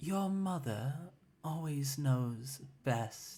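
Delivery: cloying, syrupy, sickly sweet voice. Narrator voices the mother speaking to the listener's character, in a sickly sweet voice. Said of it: "she says in a sickly, sweet voice".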